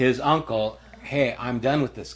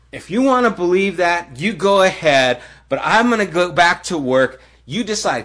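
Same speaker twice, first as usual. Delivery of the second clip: acted, furious and angry, raised and high; 6 semitones higher, 6 dB louder than usual. Recounting how he walked out mid-spiel, the speaker is retelling a furious outburst. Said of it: "because I was furious".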